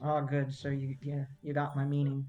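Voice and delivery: hushed, quiet whisper. In a game scene, the narrator voices Bayleaf: Bayleaf whispering. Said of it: "Bayleaf kind of whispers and says".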